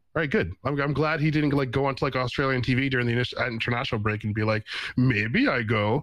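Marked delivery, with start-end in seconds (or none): 4.9-6.0 fake Austrian accent, much slower. Imagining a man's remark on australian tv, in a mock austrian accent. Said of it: "Did you like my Austrian accent?".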